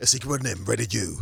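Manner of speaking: aggressive, deep, rough film-announcer voiceover voice. Recalling the man who rated every film, imitating his deep voiceover voice. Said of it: "that deep voice".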